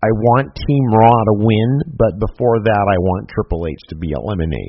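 ordinary talk

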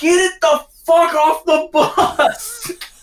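very high, very slowly dragged-out yell. Retelling a tour bus story, imitating Trent screaming. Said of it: "Trent's screaming".

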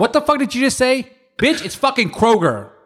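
angry, furious.

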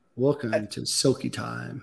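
very soft, low, hushed, sultry DJ announcer voice. Showing off the strip club DJ voice he says he does; sultry strip club DJ voice. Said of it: "It's like a sultry, it's like a blues DJ".

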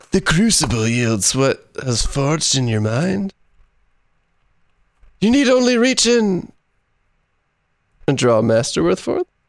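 put-on surf stoner voice. Reading a card's flavor text from Wahara, Keeper of the Crucible, as a surf stoner. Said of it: "Wahara sounds like a surf stoner".

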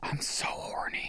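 soft, muttered whisper to himself. Retelling what a friend said to himself in a taxi: imitating a whisper. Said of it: "he whispers to himself".

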